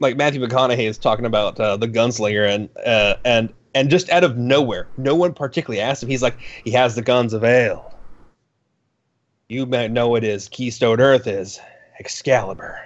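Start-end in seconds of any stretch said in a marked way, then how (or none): 6.6-12.8 put-on deadpan, awkward delivery. Retelling a movie line given out of nowhere: deadpan Matthew McConaughey impression. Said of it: "it's done in such deadpan, like, uh, awkwardness".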